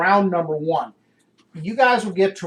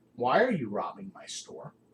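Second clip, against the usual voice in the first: very cold, icy, hushed whisper; 6 semitones lower, 9 dB quieter than usual. Narrating a scene, the speaker voices an armored figure questioning the group, very cold voice. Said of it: "in a very cold voice".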